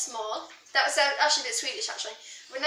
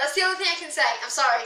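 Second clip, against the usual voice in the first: normal talking voice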